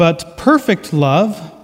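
"perfect" stressed, slow and leaning.

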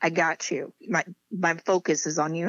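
ordinary talk

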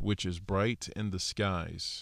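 ordinary talk, nothing marked

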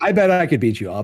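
mock playful, teasing, boastful joking tone. A parent quotes his teenage son challenging him, imitating son's joking boast.

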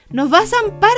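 crying out loud. A rabbit cries out as the wolf and Estofado chase Tortilla, shouting. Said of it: "gritó un conejo".

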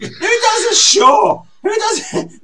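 high, loud shout with laughter.

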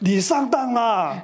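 put-on Shanghai accent, pitched high. Retelling what his father-in-law said to him, in a Shanghai accent. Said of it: "用上海腔嘅".

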